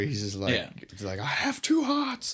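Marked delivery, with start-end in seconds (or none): 1.2-2.3 very high, stretched-out shriek. Retelling a movie scene where a character screams: imitating someone screaming. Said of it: "This is where he screams it".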